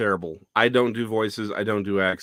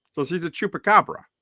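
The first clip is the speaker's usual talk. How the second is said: plain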